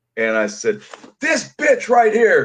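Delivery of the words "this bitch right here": mock yell, higher and louder. Retelling an argument staged for a court show producer: imitating own past yelling. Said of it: "we're yelling at each other in the dressing room".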